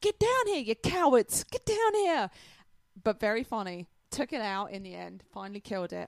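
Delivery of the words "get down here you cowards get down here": shrill, very loud, high-pitched yelled scream. Retelling yelling at teammates on the cliff top: retelling a scream. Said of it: "I start screaming at them".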